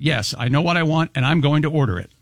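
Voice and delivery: ordinary delivery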